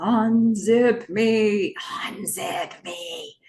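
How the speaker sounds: whispered creepy voice. Recapping an episode, voicing a dead body talking to her: whispery voice. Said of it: "we hear the whispery voice again".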